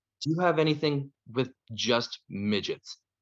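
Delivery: very quiet, hushed, under the breath. Retelling a customer's question at the counter, very quietly. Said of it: "very quietly".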